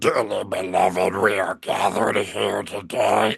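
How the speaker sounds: voice of a lifelong heavy chain smoker. Retelling a wedding, the speaker quotes the minister's opening words, in a heavy smoker's voice. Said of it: "it sounds like the man smoked every cigarette".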